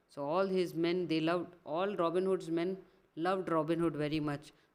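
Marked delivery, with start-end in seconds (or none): none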